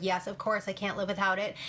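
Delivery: plain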